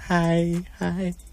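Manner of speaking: hushed, creepy, lurking stalker voice. Radio host signing off the show with a self-made echo, stalker-like voice. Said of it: "Why do you sound like a stalker?".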